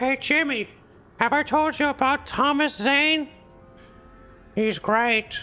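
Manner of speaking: mock male voice, slowed down. After reading out a name, the speaker tries a bad Carl Weiser impression. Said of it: "worst Carl Weiser impression I've ever done".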